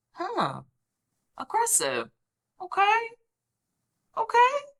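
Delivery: calm, hushed, unbothered, then okays rising high.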